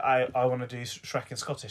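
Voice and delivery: ordinary talk, nothing marked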